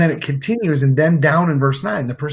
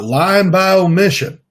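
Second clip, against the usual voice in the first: raised, folksy talk-show host voice; 4 semitones higher, 6 dB louder than usual. Quoting Doctor Phil while discussing how people justify omissions, Doctor Phil impression. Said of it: "That was my that was my Doctor Phil impression".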